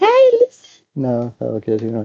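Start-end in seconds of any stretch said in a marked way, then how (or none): 0.0-0.8 tiny, very high fairy voice. Trying out voices for a game character: fairy from Legend voice. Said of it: "I could do, like, the fairy from Legend".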